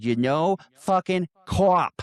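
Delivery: heavy put-on Boston accent. Retelling a movie scene where a character fully Bostons out: imitating a heavy Boston accent. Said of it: "he fully Bostons out and goes".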